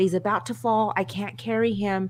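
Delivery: ordinary delivery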